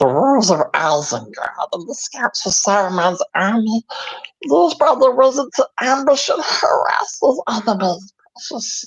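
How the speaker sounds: put-on weird character voice, words oddly bent. Reading text aloud, joking about his Gollum impression: Gollum voice. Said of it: "a perfect impression of Gollum".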